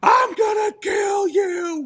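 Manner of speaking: very high, very drawn-out, top-of-lungs shriek. Retelling a rollercoaster drop with Emmy: imitating Emmy screaming at top of lungs. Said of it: "she's screaming at the top of her lungs".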